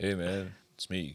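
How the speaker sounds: cool, calm, soft, easy, low-key delivery. Asked to give a taste of his K-Mac: cool, calm K-Mac voice. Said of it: "cool, calm, and collected".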